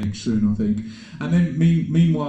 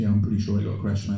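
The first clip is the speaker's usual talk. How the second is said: ordinary talk, nothing marked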